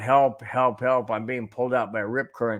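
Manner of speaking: normal talking voice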